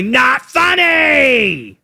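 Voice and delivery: high, slow, shouted bark. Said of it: "he'll say".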